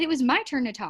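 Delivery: ordinary delivery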